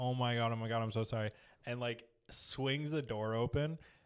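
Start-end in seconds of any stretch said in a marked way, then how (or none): 0.0-1.3 put-on crying, mock tearful tone. Retelling a character's apology at a shrine: imitating someone crying. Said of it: "crying, basically, being like".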